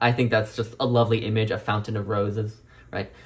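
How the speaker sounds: ordinary talk, nothing marked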